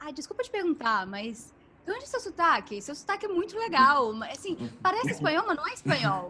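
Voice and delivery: high, loud, curious tone.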